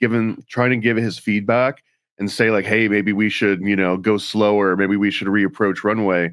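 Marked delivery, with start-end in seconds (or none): none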